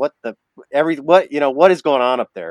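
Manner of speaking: fast, loud, angry yelling. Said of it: "is yelling at me".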